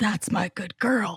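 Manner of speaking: put-on deep voice. Telling a story, the speaker quotes the story's asshole in a deep voice. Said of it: "I feel like I have to say it in a deep voice".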